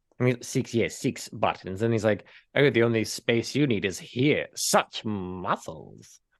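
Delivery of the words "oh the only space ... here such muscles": slow, drawn-out, posh, fancy English voice. Retelling a movie scene where a tailor fits a suit: Vincent Price-style fancy English voice. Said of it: "And he kind of talks like this".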